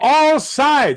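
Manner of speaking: full-volume shout, very high and very loud. In a role-play, a player voices their character's words to the others: yelling really loud. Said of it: "I yell that really loud".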